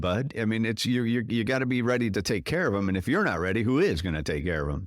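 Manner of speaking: plain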